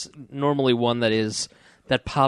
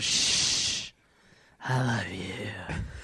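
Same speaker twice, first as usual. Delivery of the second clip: put-on very slow, boozy, drunken whisper; 5 semitones lower, 9 dB quieter than usual. Retelling a wife putting her head on his shoulder: imitating a drunk wife whispering. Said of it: "That's her drunk move".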